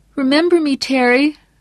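put-on very high-pitched, pleading, begging teenage voice. A man, speaking in a voice not his own, pleading with a listener; begging in an adolescent voice. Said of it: "the adolescent voice begged".

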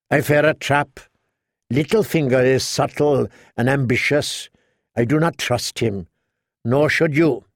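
plain reading voice

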